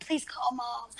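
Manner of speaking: quiet put-on whisper. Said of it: "I was whispering it".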